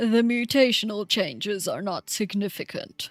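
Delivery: put-on old guy character voice. Reading a passage aloud, doing an old man voice. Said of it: "I'll do my old guy voice again".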